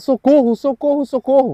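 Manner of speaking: desperate, high-pitched crying out. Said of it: "E ele começa a gritar".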